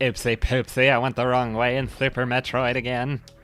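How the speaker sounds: very loud, belted, goofy cartoon alien voice. Speaker playing Super Metroid slips into the American Dad alien voice. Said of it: "talking like the alien from American Dad".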